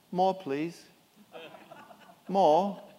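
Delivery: put-on, beggarly, poor English orphan accent. Comparing how we see ourselves to Oliver Twist, the speaker uses an Oliver Twist accent. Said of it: "You like the accent?".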